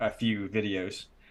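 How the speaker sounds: normal talking voice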